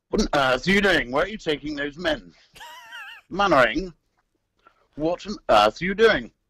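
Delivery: high, swooping voice, pitched way up. Asked to do the Colonel's voice for us: authoritative Colonel voice. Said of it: "Do the Colonel's voice for us".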